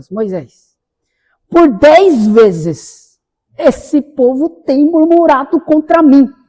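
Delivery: indignant, very slowly spoken, reproachful. Retelling the Bible story where God speaks to Moses, imitating God, indignant. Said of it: "olha o tom de voz de Deus ... Isso mostra indignação".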